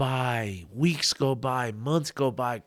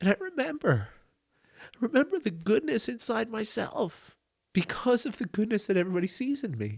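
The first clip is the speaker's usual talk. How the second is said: crying through the words, tearful, very high, voice breaking; 10 semitones higher, 4 dB quieter than usual. Retelling another boy's words about a note he rereads, crying while talking. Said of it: "I can't tell this story without crying".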